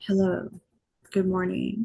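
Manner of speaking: tired, half-dead, exhausted voice. Greeting listeners while lying down, exhausted: tired, half-dead voice. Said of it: "I sound half dead".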